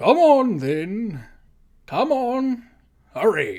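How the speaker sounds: loud, swooping, booming voice. Narrator voices someone calling the nobles up the stairs, booming voice. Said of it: "voice booms out again".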